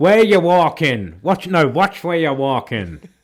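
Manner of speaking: acted loud, aggressive New York bark. Joining a bit about New Yorker stereotypes, imitating an angry New Yorker. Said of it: "Are you trying to do Midnight Cowboy?".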